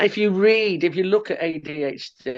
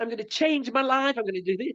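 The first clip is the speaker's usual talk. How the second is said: put-on, high, bursting with energy, raring to go; 6 semitones higher, 6 dB quieter than usual. Retelling a housemate charging in early, imitating Celia fully energized. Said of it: "she's fully energized".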